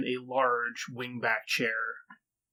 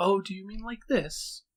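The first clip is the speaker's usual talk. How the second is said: thin, airy, high, wispy voice; 8 semitones higher than usual. Storyteller voicing the figure across the desk, in a high, wispy voice. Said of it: "high, wispy voice".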